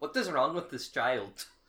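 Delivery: put-on heavy, thick Indian accent, laid on. Retelling a doctor's question to his medical students, in a thick Indian accent. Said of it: "Indian guy from India, very thick accent".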